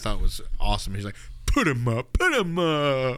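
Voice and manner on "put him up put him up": swooping, slow, drawn-out, animated character voice. Describing an actor in a movie, the speaker quotes his Cowardly Lion impression. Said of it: "He does a Cowardly Lion impression".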